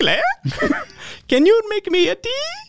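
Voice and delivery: very high, swooping sing-song voice. Retelling how Amber comes over and asks for tea: imitating Amber. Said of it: "this is my impression of Amber".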